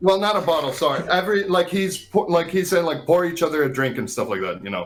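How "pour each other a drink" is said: ordinary talk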